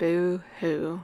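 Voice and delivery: flat, level, sarcastic monotone drone. Walking around all night in character, Wednesday sarcastic monotone. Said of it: "I kept doing it in like this monotone voice because Wednesday is very sarcastic".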